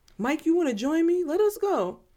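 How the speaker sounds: high, wide-pitched, eager, excited voice.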